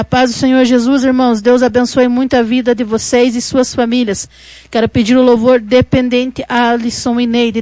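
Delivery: ordinary delivery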